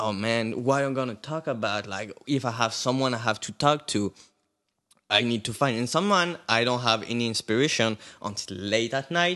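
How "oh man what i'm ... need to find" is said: ordinary talk, nothing marked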